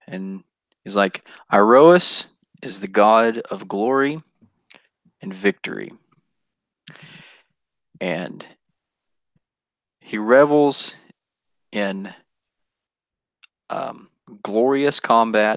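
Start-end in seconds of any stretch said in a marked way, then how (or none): 1.5-15.6 grave, earnest, slow, very serious, weighed delivery. Voicing a character who narrows his eyes and answers: real serious. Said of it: "He just kinda gets real serious with you".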